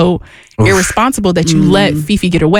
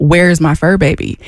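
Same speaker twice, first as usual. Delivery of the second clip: put-on panicking voice; 2 semitones lower than usual. Retelling a dog owner's reaction to the lost dog: imitating someone panicking. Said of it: "All of the panic, of course, sets in".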